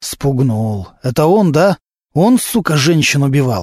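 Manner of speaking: plain reading voice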